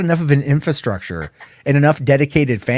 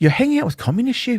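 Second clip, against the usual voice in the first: put-on British accent, pitched up; 10 semitones higher than usual. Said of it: "I can't even do British accents right now ... That sounds more like [name]".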